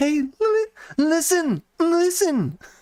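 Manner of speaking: very high, slow, stretched-out fairy voice. Imitating the little fairy from Zelda: Navi impression. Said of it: "That's my Navi im-, impression".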